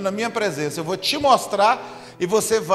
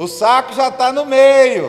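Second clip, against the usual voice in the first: put-on shout, pitched higher and louder; 3 semitones higher, 6 dB louder than usual. Retelling how a friend's mother yelled at her son: imitating a mother yelling. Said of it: "ela gritando".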